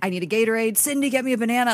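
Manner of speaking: pained screaming cry, held small and contained. Telling a co-host about their dad's painful night episodes, imitating dad screaming. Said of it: "He's like screaming".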